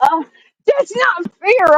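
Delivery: put-on, playful, bratty little-kid temper tantrum voice. Jealous of someone's thrift find, throwing a mock temper tantrum. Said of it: "I'm throwing a temper tantrum".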